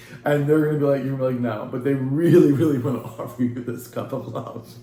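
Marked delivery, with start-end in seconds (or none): 1.7-4.7 words broken up by laughing throughout. Describing what such people will offer, the speaker talks while laughing. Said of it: "Sorry I'm laughing".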